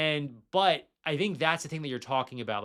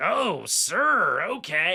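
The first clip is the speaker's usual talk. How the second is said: grumpy, sour, surly grouchy voice; 4 semitones higher, 5 dB louder than usual. Telling a story about a cab ride, he acts out the driver's reply to a passenger, imitating a surly grouch. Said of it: "who was really surly".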